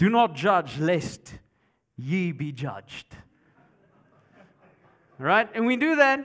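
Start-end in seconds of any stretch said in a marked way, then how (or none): 0.0-3.1 slow, put-on old archaic style of phrasing. Imitating people quoting the verse in Old King James: mock Old King James delivery. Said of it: "you say it in Old King James".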